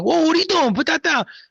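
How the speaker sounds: put-on thick, heavy New York accent, very high-pitched. Retelling how they discipline their kids: heavy new york accent. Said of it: "the New York accent comes out heavy".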